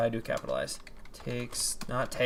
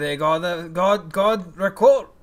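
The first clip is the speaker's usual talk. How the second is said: very loud, high, bad put-on French accent; 5 semitones higher, 10 dB louder than usual. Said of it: "as I try to speak in a not actually good French accent".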